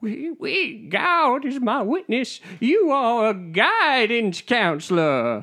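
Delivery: dramatic, very high, very slow put-on Southern belle drawl. Getting into character after the setting is painted: put-on character voice. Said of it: "Let me do my Scarlett O'Hara voice".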